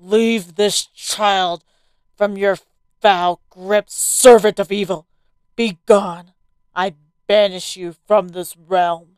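loud, authoritative, decree-like commanding voice. Holding a cross toward a girl's malevolent form, a man gives an order, commanding.

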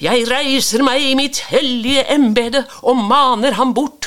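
loud, high, hollering, proclaiming priest-like voice. A priest in a boat, answering Jens, hollering. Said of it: "kauka presten".

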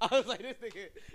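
high, laughing mock amazement.

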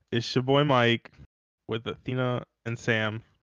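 ordinary delivery

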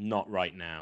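put-on furious, curt tone. Retelling how a man answered a woman's question, retelling a furious reply. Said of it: "and he was furious".

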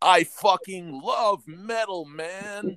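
surfer-dude California accent. Doing a bit about a best friend, california surfer accent. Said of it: "That's actually really good".

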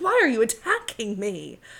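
put-on Connecticut accent with swooping, sing-song pitch. Retelling a reality TV argument: imitating Dorit's Connecticut accent. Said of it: "It was a good little accent".

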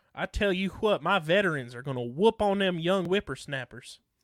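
put-on folksy Kentucky country accent. Cheering on the veterans for the All-Star game, in a Kentucky accent. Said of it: "Or should I say it in a Kentucky accent?".

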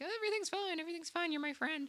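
put-on high, soft, singsong, naive and trusting girl voice. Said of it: "And Sarah's just like".

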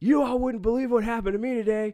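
high, loud shout. Retelling how a man on a train shouted to everybody: imitating someone shouting. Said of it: "he starts shouting to everybody".

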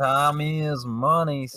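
put-on homespun southern accent. Joining a bit with the other hosts, taking a turn in a Southern accent. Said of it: "Southern accent".

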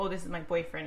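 normal talking voice

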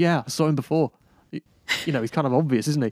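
ordinary talk, nothing marked

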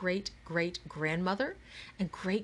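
ordinary delivery

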